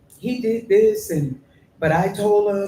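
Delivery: tearful, crying, high and drawn out. Retelling what was said to the manager while crying: retelling own crying words. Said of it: "by then now I'm ball crying".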